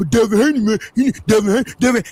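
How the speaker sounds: put-on barking complaints. Mocking people calling in and barking all loud: imitating loud barking critics. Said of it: "calling and barking all loud".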